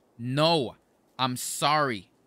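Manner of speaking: worked-up, exasperated, really angry insistent outburst. Acting out an imagined introduction where the apology escalates: mock angry. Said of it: "I'm gonna get really angry".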